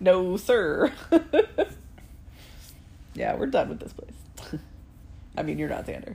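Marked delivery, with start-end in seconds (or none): 0.0-0.9 deliberately bad put-on American accent. An american imitating a man who has an american accent: really bad american accent. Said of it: "You have to do like a really bad American accent".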